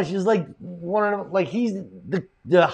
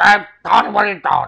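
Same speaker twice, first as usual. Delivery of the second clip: loud, rough, creaky voice; 7 dB louder than usual. Retelling a phone call from the club's original owner: imitating John. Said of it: "that's how he spoke".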